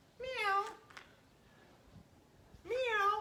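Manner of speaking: high, squeaky kitten meow. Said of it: "I'm gonna act like a kitty cat".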